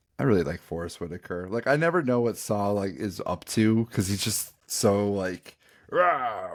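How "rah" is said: put-on crazed growl, higher pitch. Describing a rebel character as ready to kill: Saw Gerrera impression. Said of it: "that's my impression of Saw Gerrera".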